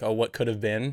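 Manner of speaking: ordinary talk, nothing marked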